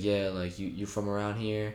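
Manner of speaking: ordinary talk, nothing marked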